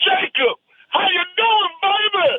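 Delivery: put-on football coach drawl. Greeting the other speaker's son in a Barry Switzer voice. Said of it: "That's not a bad Switzer".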